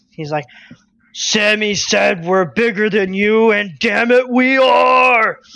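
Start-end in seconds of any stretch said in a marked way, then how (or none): 1.2-5.4 huge, swelling, booming, bombastic giant voice, stretched out. Retelling a man whose voice grows louder as he talks: booming giant-like voice. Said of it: "he starts to sound like a giant".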